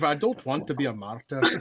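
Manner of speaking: poor put-on Scottish accent. Talking with co-hosts about Scottish intonation, in a bad Scottish accent. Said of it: "Bad Scottish accents for an American audience".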